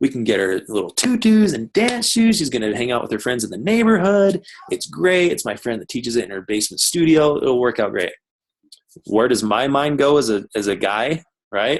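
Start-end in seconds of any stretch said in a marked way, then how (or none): 0.0-8.1 excited voice. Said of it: "she's all excited".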